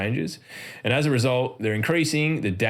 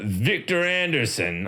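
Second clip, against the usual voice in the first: rigid, stiff, put-on secret-agent style voice; 4 semitones higher than usual. Saying a designer's name like an agent in the Matrix, in a Matrix agent voice. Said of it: "I believe you have to say it like that, like you're an agent in the Matrix".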